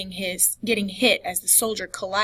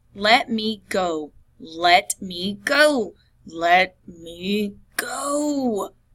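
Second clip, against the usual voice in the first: hissed through gritted teeth, much slower. Dragged out of a pub, he struggles against her grip: hissed through gritted teeth. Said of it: "he hissed through gritted teeth".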